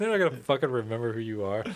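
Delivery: ordinary delivery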